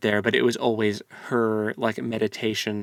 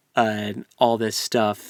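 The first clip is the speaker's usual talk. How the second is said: usual speaking voice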